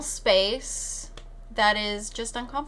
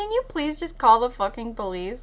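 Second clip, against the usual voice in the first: mock-exasperated, put-on angry pleading tone; 3 dB louder than usual. Retelling what a woman snapped at someone, retelling an angry plea. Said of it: "Rachel was getting so mad".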